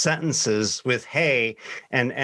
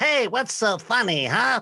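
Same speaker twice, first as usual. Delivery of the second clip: put-on squeaky, high little kid voice; 9 semitones higher than usual. Retelling what he said when the speaker laughed, in a squeaky kid voice. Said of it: "he's got kind of a squeaky voice".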